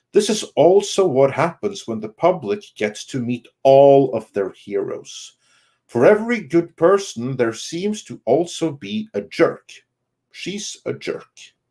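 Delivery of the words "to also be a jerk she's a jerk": normal talking voice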